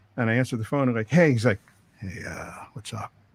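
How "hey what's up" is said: furtive, hushed, secretive whisper. Retelling a phone call from Nuno: imitating Nuno's weird secret squirrel voice. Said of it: "this weird secret squirrel voice".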